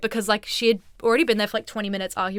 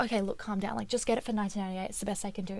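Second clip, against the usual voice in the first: put-on soothing voice, quieter; 12 dB quieter than usual. Retelling how a sister spoke to an arguing customer: imitating someone calming a person down. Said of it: "trying to calm her down".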